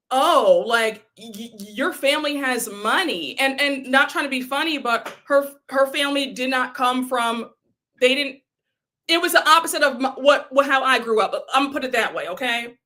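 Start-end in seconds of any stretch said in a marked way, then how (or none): 0.1-3.3 very slow drawl full of disgust. Retelling what a girl said to a young child: imitating someone saying it with disgust. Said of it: "she said it with such disgust".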